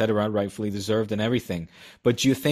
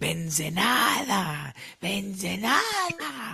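mock shrill girl voice, much higher; 10 semitones higher, 3 dB quieter than usual. Retelling a girl in a bar screaming at the TV during the Clásico, imitating a very shrill girl. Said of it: "a girl with a very shrill voice going".

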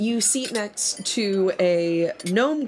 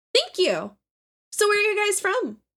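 put-on very high, chatty, swooping gnome girl voice; 13 semitones higher than usual. In a role-playing game, voicing the gnome girl seated next to the players, gnome girl voice. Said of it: "you seat next to a gnome girl".

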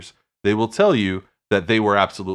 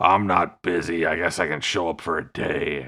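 put-on surly, grudging voice; 3 semitones lower than usual. Imagining him agreeing to show up for a day: mock-truculent Harrison Ford impression. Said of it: "Harrison Ford in his typical, like, truculent manner was like".

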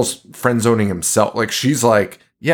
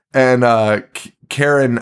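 usual speaking voice

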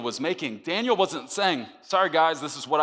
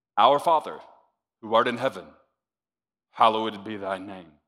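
mechanical rote prayer voice. Preaching, showing how secret-place prayer should not sound: robotically religious praying. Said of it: "Robotically religious praying".

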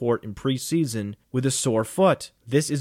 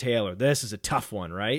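ordinary delivery

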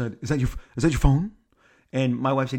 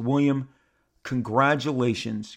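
ordinary talk, nothing marked

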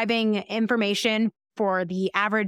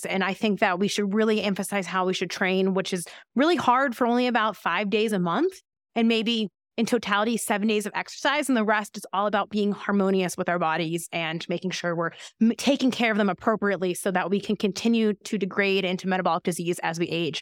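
ordinary delivery

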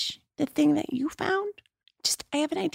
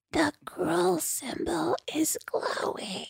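very quiet, slow, hushed murmur. Repeating a line in character after being asked: said very quietly. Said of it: "say that very quietly".

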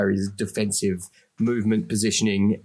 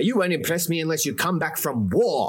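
harsh tough-love 1920s father voice, higher; 7 semitones higher than usual. Joining in the joke about a player, playing a 1920s dad: harsh tough-love 1920s dad. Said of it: "Like that, yeah".

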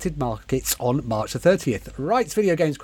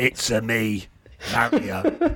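low, slow, bouncy sing-song character voice; 6 semitones lower than usual. Joking about the Mario film voice: Mario voice like Bob Hoskins. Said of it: "You've just done Bob Hoskins there".

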